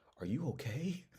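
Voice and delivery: very soft, high, genuinely concerned and caring. Retelling how Darius came over after he got up, imitating Darius's caring voice. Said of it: "genuinely with a caring voice".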